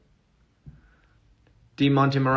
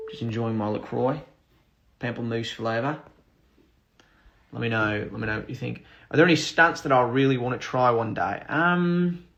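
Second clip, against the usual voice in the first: amateur attempt at an Australian accent. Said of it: "Somebody asked for an Australian accent".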